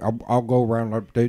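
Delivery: thick, hard-to-follow backwoods East Tennessee Southern drawl. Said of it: "they sound like Boomhauer".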